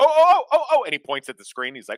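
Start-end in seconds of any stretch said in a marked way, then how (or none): 0.0-0.8 loud, high-pitched excited oh. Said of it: "like the Leonardo DiCaprio meme".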